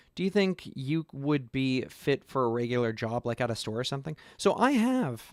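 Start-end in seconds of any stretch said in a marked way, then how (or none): 4.4-5.2 voice cracking, pitched up, very slow and drawn out. Answering an interview question about fitness for a regular job, voice cracking. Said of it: "my voice just cracked there".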